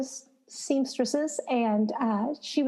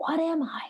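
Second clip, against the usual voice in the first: high, hushed, leaned-in, confidential stage whisper; 6 semitones higher than usual. Retelling filling out a form at a supply store: imitating own half-whisper. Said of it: "kinda leaned over to her and whispered".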